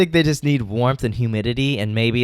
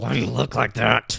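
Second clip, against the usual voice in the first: put-on rough, creaky, comic character voice. Quoting a friend's favourite line: imitating Lindsay's funny voice. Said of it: "I love Lindsay's different voices".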